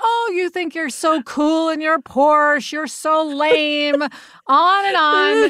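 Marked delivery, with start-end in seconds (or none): 0.0-4.0 put-on heckling with light ranting jabs. Retelling yelling at people blaring music in a Porsche, retelling a yell. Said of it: "start yelling at them and saying".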